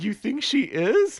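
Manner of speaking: slow, high, freaked-out. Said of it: "Karen gets all, like, freaked".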